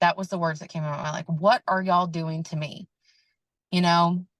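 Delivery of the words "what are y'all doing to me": muted cry, scream only suggested. A mother recalling giving birth repeats what she cried out, retelling a scream. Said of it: "I was screaming".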